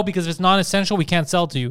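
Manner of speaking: ordinary delivery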